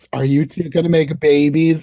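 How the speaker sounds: put-on sleazy, leering, creepy dirty old-man voice. Retelling what a man asked the couple, in a creepy dirty old man voice. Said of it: "in the most creepiest, dirty old man voice".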